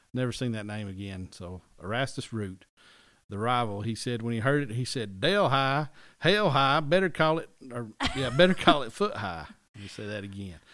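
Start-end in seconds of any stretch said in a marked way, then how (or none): 5.2-9.5 very loud, high put-on Southern accent. Quoting a rival's remark on a town name: imitating a southern accent. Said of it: "he's Southern, yeah".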